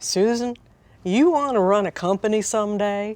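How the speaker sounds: put-on slow, drawling Texas accent. Retelling what the boss asked about running a company: Texas drawl imitating Bill. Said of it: "in this Texas drawl and he said".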